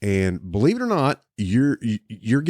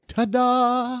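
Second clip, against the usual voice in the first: much higher, showy, theatrical delivery. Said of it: "and it's like".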